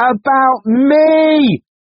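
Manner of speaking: shrill, very high, loud yell, "me" drawn out. Gaia confronts Kay, shouting, stamping her foot. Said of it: "she shouted, stamping her foot".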